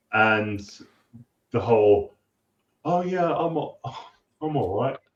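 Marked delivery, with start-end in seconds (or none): 2.8-4.9 breezy, very polite British manner, pitched up. Quoting a character's lines to show their Britishness: imitating British manner. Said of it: "that Britishness of".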